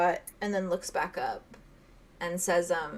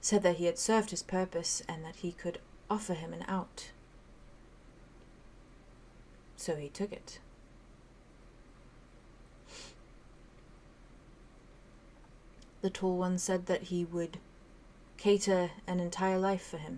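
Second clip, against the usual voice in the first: hushed, very soft, near-silent whisper; 11 dB quieter than usual. A little skull looks back up and answers, very soft. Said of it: "He just very softly says".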